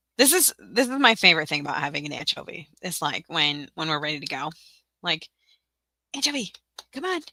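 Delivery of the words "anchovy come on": put-on whisper, higher. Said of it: "I have to kind of whisper".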